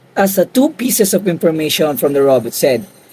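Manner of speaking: normal talking voice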